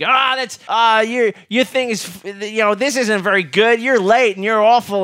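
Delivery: horribly unpleasant, loud, sour scolding in a teacher voice. Retelling what the art teacher would say to the speaker: imitating Miss Maybelline being unpleasant. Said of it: "say something horribly unpleasant to me".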